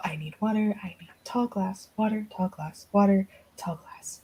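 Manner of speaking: barely audible, very quiet muttering under the breath. Game master voicing a woman heading back to the kitchen, mumbling to herself. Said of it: "just mumbling to herself".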